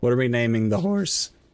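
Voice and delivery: voice breaking mid-line. Polling everybody for a horse nickname, with a voice crack. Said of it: "I'm sorry, voice crack".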